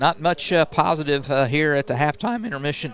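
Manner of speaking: voice cracking and breaking mid-phrase. A broadcaster reading halftime stats for the Pirates, voice cracking. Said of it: "Voice cracking there".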